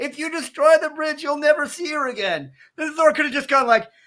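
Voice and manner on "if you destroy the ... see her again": mock high-pitched screaming. Retelling a movie scene with a warning before a bridge is destroyed: imitating Loki screaming. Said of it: "Loki literally screams at him".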